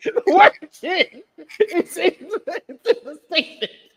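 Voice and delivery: high, loud laughing through the words.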